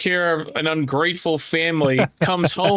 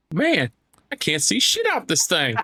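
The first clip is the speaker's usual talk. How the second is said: meticulously copied, swooping movie-character voice. Retelling a movie scene line, imitating a movie character's voice. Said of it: "I love when you do that voice".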